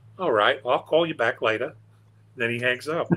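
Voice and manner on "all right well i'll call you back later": best-attempt put-on Australian accent. Retelling a phone call from a friend in Australia, quote the friend in an Australian accent. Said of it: "that's my best Australian accent".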